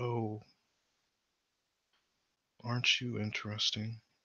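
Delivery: hushed, very soft half-whisper. Narrating a scene, voicing a man inspecting a painting: half-whispering. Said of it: "he whispers".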